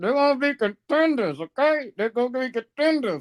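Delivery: very high, muffled, unclear mumble. Giving a football prediction before being asked to repeat it: muffled mumbling. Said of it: "you sound kind of muffled".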